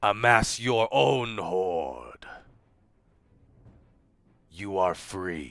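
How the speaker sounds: low, menacing, evil dragon voice. Sending a message to a young dragon: evil dragon voice. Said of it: "do his best evil dragon voice".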